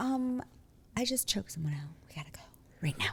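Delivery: play-acted, utterly unruffled, very calm, soft, hushed. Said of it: "the calmest person".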